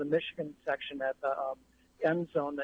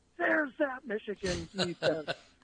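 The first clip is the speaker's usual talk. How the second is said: mock half-yelled, mild yell, pitched up; 5 semitones higher than usual. Recalling the game's last play, when people turned on the speaker's brother: retelling a crowd's yell. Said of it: "all these people yell at my brother".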